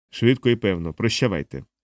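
ordinary delivery

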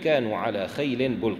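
ordinary talk, nothing marked

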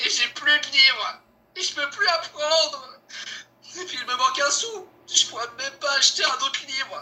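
weepy, sad, close to crying. In a scene, a character laments to a friend, who tells him not to cry: tearful. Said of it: "Ben faut pas pleurer".

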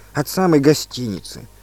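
plain

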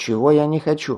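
plain

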